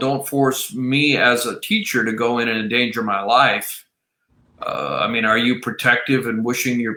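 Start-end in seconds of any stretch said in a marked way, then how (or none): none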